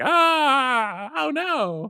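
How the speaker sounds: very high, drawn-out, panicked shrieking scream. Voicing mall shoppers who run out screaming: acted panicked scream. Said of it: "people screaming and running out of this mall".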